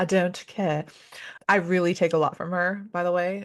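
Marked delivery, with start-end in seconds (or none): 0.0-0.8 put-on British accent. Speaker on a podcast embodying her best friend Victoria: Victoria's British accent. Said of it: "with the British accent".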